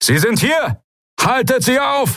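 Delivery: very high, rising shout, alarmed. A voice behind the open door across the room, shouting an alarm. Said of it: "der Ruf ertönte".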